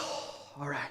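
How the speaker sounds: breathy, hushed sigh, almost whispered. Retelling how a woman reacted after students failed her questions; imitating someone sighing. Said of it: "she was sighing".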